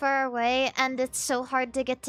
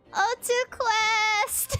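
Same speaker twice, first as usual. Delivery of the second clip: acted, put-on, drawn-out yelling scream; 9 semitones higher than usual. Retelling yelling out the car window while driving away, re-enacting a scream. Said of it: "sc I screamed".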